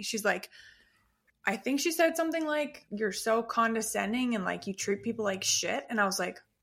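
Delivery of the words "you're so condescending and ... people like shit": ordinary delivery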